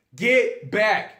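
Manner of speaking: very loud, high-pitched, aggressive, threatening yell. Showing how to yell a warning with aggression before shooting: aggressive yell. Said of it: "Get aggressive".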